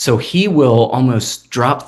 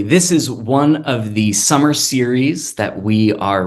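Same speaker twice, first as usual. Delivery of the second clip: normal talking voice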